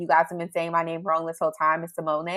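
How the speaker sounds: ordinary talk, nothing marked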